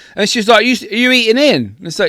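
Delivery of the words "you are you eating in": high-pitched mocking shout. Retelling a worker's question at the door: imitating someone shouting. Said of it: "she fucking shouted at me".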